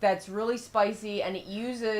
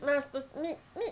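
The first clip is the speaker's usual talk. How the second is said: put-on childlike cartoon voice, much higher, quieter; 6 semitones higher, 5 dB quieter than usual. Trying a voice a co-speaker says he does pretty good: Meatwad voice. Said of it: "You got it".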